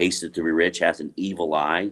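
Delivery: plain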